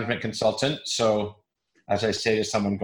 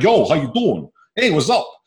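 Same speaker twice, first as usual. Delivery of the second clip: put-on Brooklyn accent, pitched up; 7 semitones higher, 7 dB louder than usual. Recalling greeting a guy from brooklyn, in a brooklyn accent. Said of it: "a guy from Brooklyn will come up".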